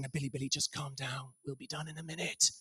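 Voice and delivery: hushed. Retelling how a dad in the aisles hushed his screaming three-year-old, quietly. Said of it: "Dad was quietly saying".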